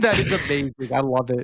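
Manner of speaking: words broken by bursts of laughter. Reacting to another speaker's funny story, laughing while talking. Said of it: "I'm over here laughing".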